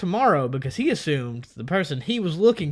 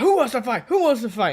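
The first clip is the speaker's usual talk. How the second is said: play-acted, high-pitched hollered yelling; 9 semitones higher, 4 dB louder than usual. Telling a story, quoting a man who yelled by a car, retelling a yell. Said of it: "he's yelling".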